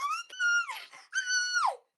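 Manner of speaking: very high, slow, drawn-out screaming wail. Retelling waking up to mother after the break-in: imitating mother screaming. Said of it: "Screaming on the top of her lungs".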